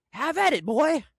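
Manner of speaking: careless, loud, high egging-on cheer. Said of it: "what's the positive in being like".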